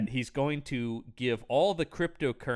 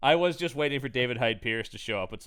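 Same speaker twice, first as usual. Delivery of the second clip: normal talking voice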